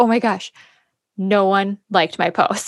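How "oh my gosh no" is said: plain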